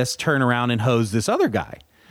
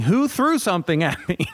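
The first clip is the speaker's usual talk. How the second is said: startled scream of alarm; 5 semitones higher than usual. Retelling collapsing with a ruptured Achilles: imitating own past screaming. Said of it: "I started screaming".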